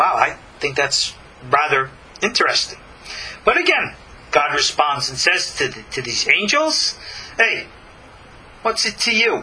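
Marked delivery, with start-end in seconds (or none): 7.4-9.4 put-on, laid-on Sicilian accent, pitched up. Speaker acting out God's reply to the angels, in a Godfather-style Sicilian accent. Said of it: "put on a little Italian-ass Sicilian accent".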